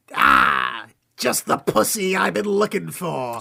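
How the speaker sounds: loud, drawn-out delivery with big pitch swings. Reluctantly doing the line when asked, in Penguin voice. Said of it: "Oh, you're making me do it?".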